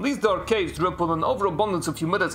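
clearly not-quite-convincing put-on fake Dutch accent. Reading a passage aloud in honor of Amsterdam, in a fake Dutch accent. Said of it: "here is my finest Dutch accent".

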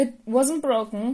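cracking voice. Viridian answers Shota's objection, voice cracking. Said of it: "Viridian's voice cracked".

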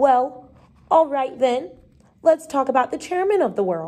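ordinary delivery, nothing marked

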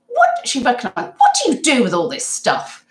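loud imitated voice. Retelling a woman's question at a shop counter, imitating someone talking loudly. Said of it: "Like really loudly".

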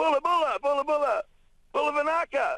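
very high, calling shout. Stranded on a reef, retelling calling out to be rescued, retelling own shouting. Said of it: "I started shouting".

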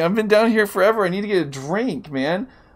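voice cracking. After being down here forever, speaker says he needs a drink, voice cracking. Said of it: "my voice is cracking".

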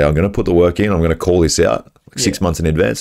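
ordinary talk, nothing marked

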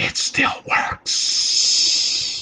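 hushed breathy whisper, under the breath. Leaning in the way Joe Biden does: Joe Biden whisper. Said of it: "like kind of leaning in and whispering, like".

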